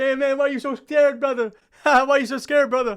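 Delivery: teasing, laughing through words, high and loud. Imagining Merab taunting someone with bullets flying: imitating Merab laughing. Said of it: "Merab's going to be there laughing".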